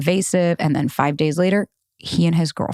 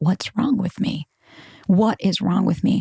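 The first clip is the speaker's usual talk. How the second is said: put-on hysterical sobbing. Retelling breaking down while calling mom: retelling own hysterical crying.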